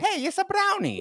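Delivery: put-on Italian accent, very high-pitched. Retelling how a man greeted the speaker by a nickname, imitating an Italian accent. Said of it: "he would do it with an Italian accent".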